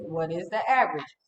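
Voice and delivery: ordinary talk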